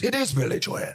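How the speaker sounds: put-on high Irish accent. Retelling what the irish comic answered: imitating an irish comic. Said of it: "the Irish comic goes".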